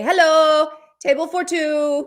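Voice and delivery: loud, slow put-on Japanese accent, words spaced out. Retelling a restaurant visit, imitating the other speaker: imitating a japanese accent. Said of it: "You do the accent I was doing".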